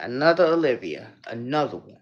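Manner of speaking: deep, low, hyped-up DJ voice. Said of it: "In my [name] voice".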